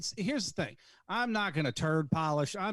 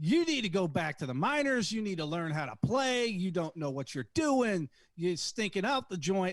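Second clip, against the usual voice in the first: acted-out barrage of screamed heckling; 3 semitones higher than usual. Recounting yelling at a player from near the baseline, retelling screaming at a player. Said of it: "I'm screaming at this man".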